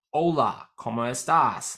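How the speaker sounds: Spanish spoken with a genuine-sounding Aussie accent. Repeating a basic Spanish greeting: Spanish with an Aussie accent. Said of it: "I say that like a real, real Aussie".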